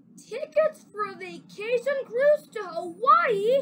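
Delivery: gasped words. Reading a story aloud, parents react to a present from their son: gasped. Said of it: "they gasped".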